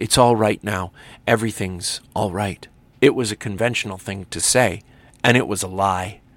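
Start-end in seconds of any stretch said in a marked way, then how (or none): 0.0-2.7 whispered, lower. The narrator holds a woman close and comforts her, whispered. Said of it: "I whispered".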